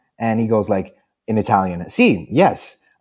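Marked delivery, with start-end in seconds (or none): 1.9-2.8 short, dry, curt, uninterested delivery. Retelling meeting a guy who answered without wanting to talk: imitating a dry reply. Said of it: "so dry".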